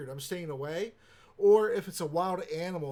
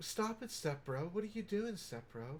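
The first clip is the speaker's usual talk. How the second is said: very soft, very quiet, fake sexy female voice; 10 dB quieter than usual. Players joking about a game, one speaks in a fake sexy female voice. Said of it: "in your best female sexy voice".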